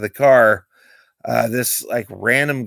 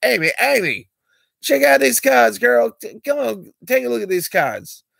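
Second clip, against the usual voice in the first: very high, pitched-up, slang-heavy street patter; 12 semitones higher than usual. Retelling a guy calling his girlfriend over to see cards: imitating a guy talking slang.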